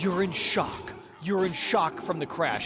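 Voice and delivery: ordinary talk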